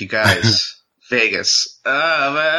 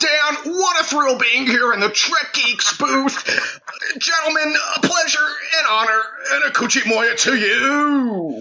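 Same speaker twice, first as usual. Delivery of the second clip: very high seventies announcer voice. Greeting the hosts at their booth: seventies announcer voice. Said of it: "the boys doing the seventies announcer voice".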